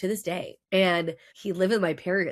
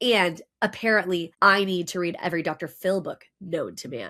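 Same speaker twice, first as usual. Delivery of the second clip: ordinary talk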